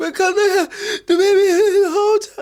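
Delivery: very high, loud fake sob with no tears. Mimicking a woman's crying voice on camera: imitating a crying voice. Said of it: "The only way I could ever do that voice".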